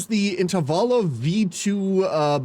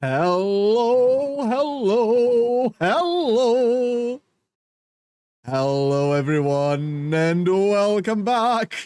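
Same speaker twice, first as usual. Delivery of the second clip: bubbly, giddy, drawn-out delivery; 4 semitones higher than usual. Greeting everyone and welcoming them back, giddy. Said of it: "Sorry, I'm a bit giddy".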